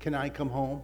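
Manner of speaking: mock meek, humble asking tone. Retelling what he said to her, acting very humble. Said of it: "I said it very humble like".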